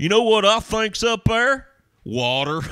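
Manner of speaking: very high, loud put-on country accent. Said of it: "than like".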